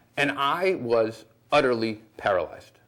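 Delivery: ordinary delivery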